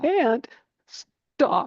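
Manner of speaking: high, play-acted words choked out between sobs. Recalling answering mom between sobs: imitating sobbing speech. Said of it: "I could hardly speak between the sobs".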